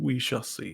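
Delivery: soft put-on voice. Narrating a scene as an eye slowly blinks open: voice from the eye. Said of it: "you hear the voice say".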